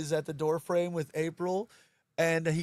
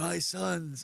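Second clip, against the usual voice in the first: put-on old martial arts master voice; 3 dB quieter than usual. Acting out a movie scene where the mentor appears in the fire: Splinter voice. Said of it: "I don't know if I should be doing the Splinter voice".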